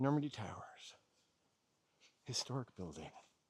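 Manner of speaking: speaking in a whisper. Showing a building nearby, whispering. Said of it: "I'm only whispering".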